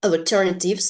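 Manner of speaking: alternatives said with stress on second syllable. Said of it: "the stress is on the second syllable".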